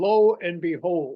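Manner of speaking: put-on deep German accent. Recalling a phrase a philosophy professor always said, Doctor Coley's deep German accent. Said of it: "in a deep German accent".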